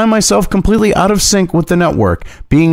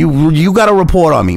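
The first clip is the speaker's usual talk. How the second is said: put-on New York street accent, mobster-style. Mocking the audience's picture of him forcing them to cover him, in a new york accent. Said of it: "talking with a New York accent going".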